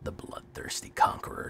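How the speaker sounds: hushed near whisper, low and breathy. Insisting the card's name must be spoken this way: hushed tones. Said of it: "You have to say it real low. You have to speak his name in hushed tones".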